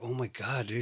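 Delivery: soft, frightened, panicked voice under the breath. Retelling how a man sounded once his nose started bleeding, imitating a scared voice. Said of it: "the scaredness in his voice is like".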